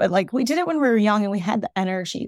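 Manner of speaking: tearful, speaking through tears, crying. A speaker tears up while remembering being young: crying. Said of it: "I don't know why I'm crying".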